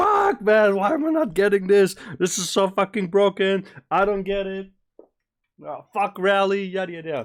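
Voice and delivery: very high, shrill, loud, frustrated furious swearing rant. Retelling how he reacts after losing in PVP, imitating his own angry rant. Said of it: "I'm fucking losing my shit".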